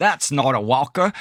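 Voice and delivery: amateur, attempted Australian accent. Quoting an old man with a walker at a nursing home, attempted Australian accent. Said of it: "was that a good Australian accent?".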